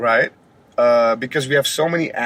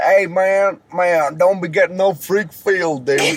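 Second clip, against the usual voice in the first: put-on, fake Southern US accent; 4 semitones higher than usual. Speaker imitates how Southern people talk, imitating a Southern US accent. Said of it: "that's some southern shit".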